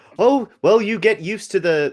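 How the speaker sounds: put-on slipping into American accent. Voicing a character in a game, slipping into an American accent. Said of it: "why am I going American?".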